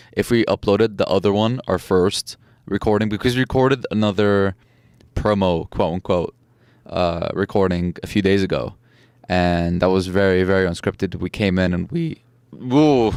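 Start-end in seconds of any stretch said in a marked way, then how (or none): 11.2-13.1 voice cracking, much slower. Podcast host recalling an earlier promo recording, voice cracking. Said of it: "first voice crack on the podcast".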